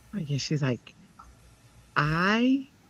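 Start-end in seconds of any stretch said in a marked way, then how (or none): 1.9-2.6 calm, unhurried, even, slow counselor-like tone. Retelling what a college counselor said: imitating Sandy's calm voice. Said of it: "this is how she talks".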